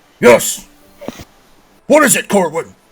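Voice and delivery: big, resounding, booming voice, very loud. A storyteller voices someone answering a knock at the door, booming voice. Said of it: "it's a like almost like a booming voice".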